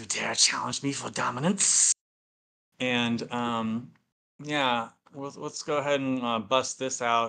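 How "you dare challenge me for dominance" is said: fast, rough hiss with a rasping edge. Narrating the scene, voicing her challenge as she hisses. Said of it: "She hisses".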